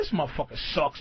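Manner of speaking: muttering under breath. Retelling what a robber said before the robbery: imitating muttering under breath. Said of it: "saying shit under his breath".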